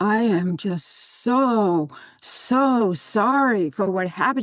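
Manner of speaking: put-on sobbing voice. Retelling an apology to a friend: retelling a sobbing apology. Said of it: "I'm hysterical. I mean, I am sobbing".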